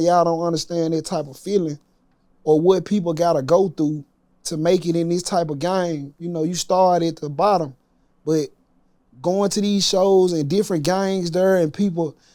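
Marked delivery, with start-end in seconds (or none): none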